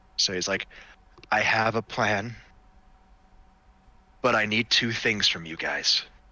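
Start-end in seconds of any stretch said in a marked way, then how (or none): 1.3-6.1 very soft, quiet voice, lower. Voicing a character speaking from far away into heads: very quiet voice. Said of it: "very quietly".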